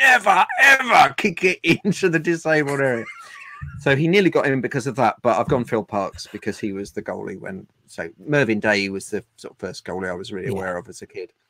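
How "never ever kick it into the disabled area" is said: slow, high-pitched, roaring bellow. Retelling how the goalkeeping coach came over to a man who booted the ball, retelling a coach's bellow. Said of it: "just bellowed at him".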